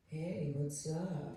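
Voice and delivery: put-on smooth voice. Retelling an unexpected phone call on a road trip, quoting the caller: retelling a smooth greeting. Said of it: "it was very smooth".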